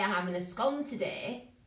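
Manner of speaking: put-on northern English Lancashire accent. Quoting the speaker's mother saying she's having a scone, northern Lancashire accent. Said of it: "If I go Lancashire, if I talk like my mother, she'd say".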